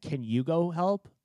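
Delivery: acted snippy, bitchy tone, high and drawn out. Retelling how a woman at the table asked the speaker to help: mock-bitchy request. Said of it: "she said it in such a bitchy way".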